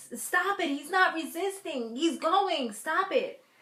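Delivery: put-on drawn-out screaming cry, high and slow. Recapping a show scene where Alex shouts at police: imitating someone screaming. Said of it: "screaming at the top of her lungs".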